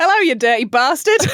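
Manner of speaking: put-on light Australian accent, slight twang. Quoting a man's rude greetings to his neighbours, the speaker uses a slight Australian twang. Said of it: "saying it with a slight Australian twang".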